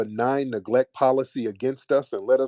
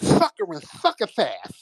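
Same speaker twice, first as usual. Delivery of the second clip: very high, swooping, heavy cartoon lisp; 14 semitones higher than usual. Speaker mocks how a man talks, in a Sylvester the Cat lisp. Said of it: "Sylvester the cat".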